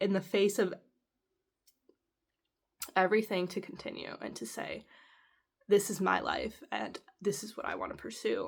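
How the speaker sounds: almost whispered, hushed, overcome with emotion. Speaker reflects on someone's mission and admits getting emotional, emotional. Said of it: "the reason I'm getting emotional".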